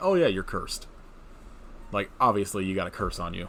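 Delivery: normal talking voice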